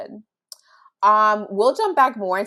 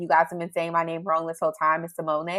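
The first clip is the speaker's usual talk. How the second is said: plain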